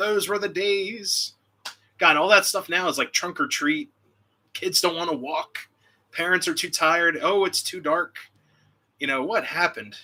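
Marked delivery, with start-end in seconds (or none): 0.0-1.3 put-on slow old man voice, words drawn out. Reminiscing about Halloween in the old days, saying it again in an old guy voice. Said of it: "I sound like an old guy".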